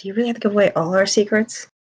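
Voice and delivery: quiet whispered aside. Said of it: "like a side whisper".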